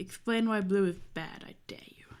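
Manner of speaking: menacing, ominous, threatening tone. Daring someone to explain why blue is bad: threatening. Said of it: "I made that sound so ominous".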